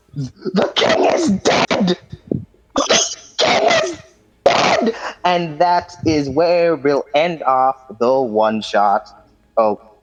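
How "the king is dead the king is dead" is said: harsh, screeching, repeated cry. Voicing someone in the story yelling the final news: screeching yell. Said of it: "a screeching cry as someone yells".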